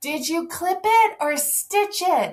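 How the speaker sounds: put-on very high, drawn-out yell. Retelling yelling across a hospital hall from the bed: imitating himself yelling. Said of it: "I'm yelling across the hall".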